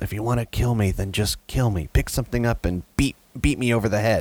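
mumbling under breath. Reading a father's words to his son from the story, muttering. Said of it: "he mutters to his son".

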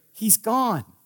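tiny high voice. Retelling a grandchild hiding nearby and answering: little voice. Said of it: "on this little voice I hear".

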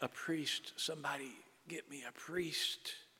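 gasping out words. Storyteller voicing a dying man on the sidewalk calling for a priest, gasping. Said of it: "And the man gasps".

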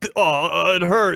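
put-on ogre character voice. In a role-play fight over a rock, a character reacts in ogre voice. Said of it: "do your ogre voice".

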